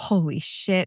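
whispered under the breath. Speaker retells how a man reacted to Deb's story: imitating someone whispering. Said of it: "just starts whispering".

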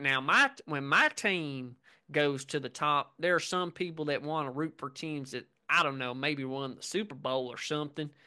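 put-on thick, heavy Georgia accent. Quoting a man who spoke about bandwagon NFL fans, thick Georgia accent. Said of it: "thick Georgia accent".

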